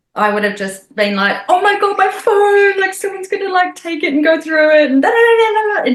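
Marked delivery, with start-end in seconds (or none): 1.4-5.8 mock panic, very high, loud and frantic. Retelling how they used to react to losing a phone: imitating own panic. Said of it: "Old me would have lost it".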